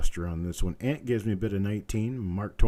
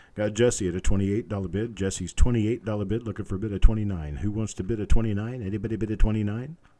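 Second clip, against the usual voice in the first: ordinary talk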